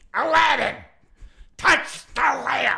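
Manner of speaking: very high-pitched, rough, rasping creaky voice. Joking that a character turned into Gilbert Gottfried: Gilbert Gottfried voice. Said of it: "she turned into Gilbert Godfrey".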